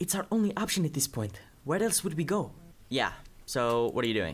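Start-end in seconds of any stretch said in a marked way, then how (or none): 0.0-2.5 secretive, hushed tones, pitched up. Narrating a scene, the speaker voices Kajuka answering Demetrius, in a hushed voice. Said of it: "talking in, like, hushed voices".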